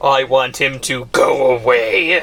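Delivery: darkly ominous, foreboding tone. Reacting to a presentation video on stream with others, ominous. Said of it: "[Winward, ominously]".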